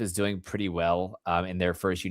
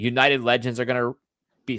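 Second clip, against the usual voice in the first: speaking with the hiccups; 4 semitones higher, 3 dB louder than usual. A speaker talking while they have the hiccups. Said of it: "I've got the hiccups here".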